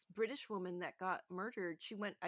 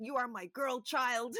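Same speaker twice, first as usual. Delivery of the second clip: voice raised up; 3 semitones higher, 7 dB louder than usual. Recalling a risky nanny job, imitating her mother's voice. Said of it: "I hear my mother's voice".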